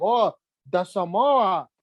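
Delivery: Samoan accent, laid on thick. Showing friends how Samoan people talk: imitating Samoan speech. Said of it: "They talk like that".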